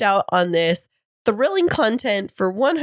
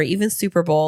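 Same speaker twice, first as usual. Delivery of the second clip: plain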